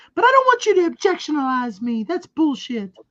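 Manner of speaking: mock wrestler impression. Mocking a wrestler's lines while she is on TV: mocking imitation. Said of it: "I'm gonna make fun of her".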